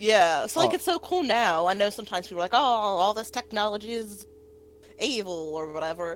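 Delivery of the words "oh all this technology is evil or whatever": put-on older boomer-style voice. Mocking people who call technology evil, the speaker uses a boomer accent. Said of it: "It's my boomer accent".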